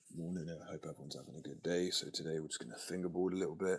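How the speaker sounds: low, laid-back, easygoing, chilled-out voice. Showing their natural speaking voice while greeting everyone, laid-back and deeper. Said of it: "it's just more laid back like that".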